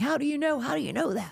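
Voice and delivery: acted-out, high, agitated yell. Retelling what a man said to them, imitating a man yelling. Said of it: "I use that voice cause he's still yelling".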